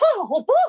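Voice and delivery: breath out, then a very high note. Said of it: "You've gotta have that higher note".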